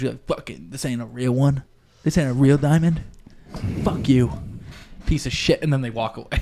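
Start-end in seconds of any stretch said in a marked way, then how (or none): 0.3-5.6 put-on pissed-off outburst, furious and swearing. Retelling a girl's reaction to a fake diamond ring: imitating an angry girl. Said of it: "she gets fucking pissed at him".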